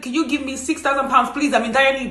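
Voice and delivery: ordinary talk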